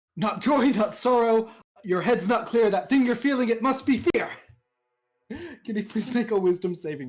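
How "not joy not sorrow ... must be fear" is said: loud shouted, hurled-out delivery. Casting a spell at an ogre while in character: shouting a spell at the ogre. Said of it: "he shouts out at the ogre".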